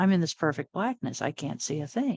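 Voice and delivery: ordinary talk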